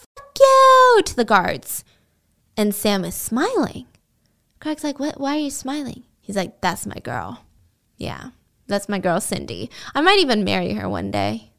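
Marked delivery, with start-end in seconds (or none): 0.2-1.0 very high, loud screeching scream. Telling a jail story, the speaker imitates a woman screaming at the guards. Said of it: "they just hear this woman screaming".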